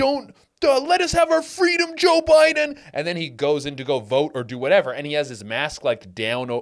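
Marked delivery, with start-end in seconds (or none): 0.0-2.8 mock yelling, much higher and louder. Retelling a man yelling at a press conference, imitating him screaming. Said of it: "he's just screaming and spitting everywhere".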